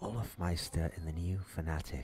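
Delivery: mock whispered voice. Retelling casting late at night so neighbors couldn't hear: imitating own whispered casting.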